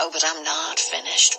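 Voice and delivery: ordinary delivery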